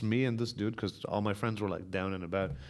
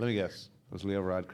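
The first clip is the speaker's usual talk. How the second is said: ordinary delivery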